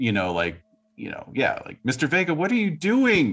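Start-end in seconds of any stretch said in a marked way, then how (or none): 1.8-3.3 very high, distressed crying out. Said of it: "kind of crying out".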